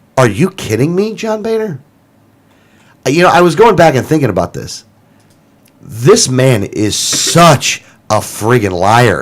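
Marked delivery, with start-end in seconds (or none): 0.2-1.8 snarky, sarcastic, pitched up. The speaker asks a first question about a politician's credibility: snarky and sarcastic. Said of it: "I'm being a little snarky and sarcastic here".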